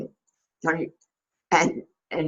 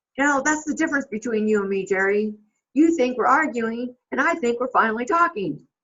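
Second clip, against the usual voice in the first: put-on yelling, raised and pitched up; 6 semitones higher than usual. Retelling a movie scene as Rod Tidwell calling after someone leaving: imitating Rod Tidwell yelling. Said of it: "Rod Tidwell yells at".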